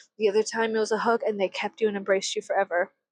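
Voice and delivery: ordinary talk, nothing marked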